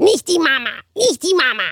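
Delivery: high, babyish put-on little-kid voice. Quoting the funniest dubbed character, the baby, in a put-on baby voice. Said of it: "das Witzigste ist das Baby, wie die immer".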